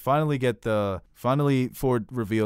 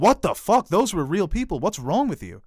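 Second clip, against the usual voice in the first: loud, high outraged shock. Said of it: "she'd be like".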